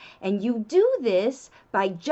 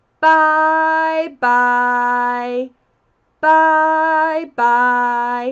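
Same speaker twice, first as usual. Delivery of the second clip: very slow, loud, drawn-out "bye bye"; 8 dB louder than usual. Showing parents how to say bye bye to a child, very slow. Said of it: "you should be saying it very slowly".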